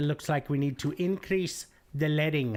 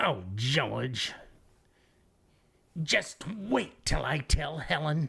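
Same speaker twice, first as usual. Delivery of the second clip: put-on wheezy character voice, slower. Goof around with a voice you admit you're not that good at, a wheezy Weezy Jefferson voice. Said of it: "I gotta hang up the wheezy".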